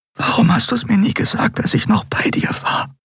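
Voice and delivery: hushed, grief-stricken, reproachful whisper. A woman speaking to someone who has died, whispering. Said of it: "flüsterte sie".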